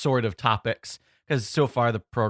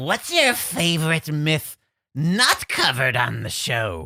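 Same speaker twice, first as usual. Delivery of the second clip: full gremlin creature voice, high and slow; 6 semitones higher, 3 dB louder than usual. Reading a question from the chat aloud: total gremlin voice. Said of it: "I picked total gremlin".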